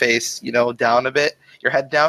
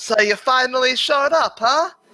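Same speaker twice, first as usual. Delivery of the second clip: loud, very high, smug yell; 13 semitones higher than usual. Voicing a character calling to a player who steps into the clearing: yelling out. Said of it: "he yells out".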